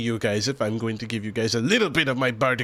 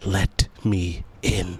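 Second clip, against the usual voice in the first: hushed, whispered dwarf voice; 4 semitones lower than usual. Voicing a dwarf whispering into a player's ear: dwarf whispering. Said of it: "everyone in this room hears a dwarf whisper".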